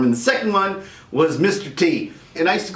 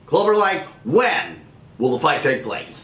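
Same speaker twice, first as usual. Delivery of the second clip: ringside fight-announcer voice. Acting out a quote where the announcer asks clubber lang about the fight, in an announcer voice. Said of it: "That's that's my announcer voice".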